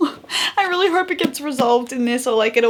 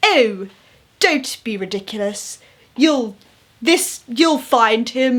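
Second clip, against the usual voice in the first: deepest possible, slow, motherly voice. Retelling how a young woman tried to sound old, imitating Charlotte's deep voice. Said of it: "it just like was the deepest".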